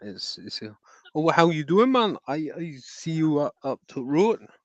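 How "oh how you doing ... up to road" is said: put-on Geordie Newcastle accent, pitched up. Show the listener how people from Newcastle speak, in a put-on Newcastle accent. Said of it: "Like that. They speak like that".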